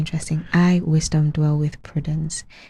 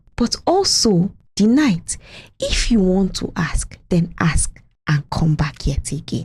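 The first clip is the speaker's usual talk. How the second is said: dramatic Nigerian movie-style delivery; 3 semitones higher than usual. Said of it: "like a Nigerian movie that Sam Loco would say".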